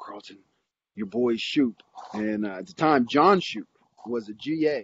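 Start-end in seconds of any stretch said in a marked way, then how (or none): 0.0-1.8 fake rough, gravelly voice. Retelling what Coach Reese said on the plane, Coach Reese's gravelly voice. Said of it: "in this real gravelly voice".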